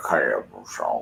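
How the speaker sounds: put-on, very low, mush-mouthed Mississippi mumble. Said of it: "he did not talk like that".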